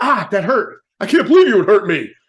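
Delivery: high, loud, hurt and angry outburst.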